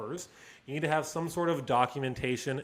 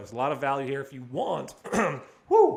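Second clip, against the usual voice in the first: voice cracking, louder; 6 dB louder than usual. Wrapping up a podcast episode for listeners, voice cracking. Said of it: "see, my voice is cracking".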